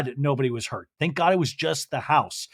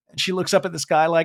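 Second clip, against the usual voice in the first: plain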